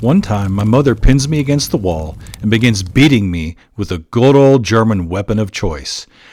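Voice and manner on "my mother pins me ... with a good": plain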